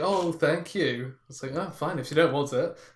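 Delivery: put-on, mock-sarcastic sounding voice. Showing how you answer when offered a job, acting out sarcastic-sounding thanks. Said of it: "a voice that can sound sarcastic very easily".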